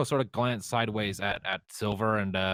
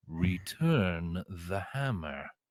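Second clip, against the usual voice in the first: deep, soft godlike voice; 5 semitones lower, 5 dB quieter than usual. A player in a dice game speaks to a god, sounding like Helm: Helm's godly voice. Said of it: "in the mightiest, most godly voice I can".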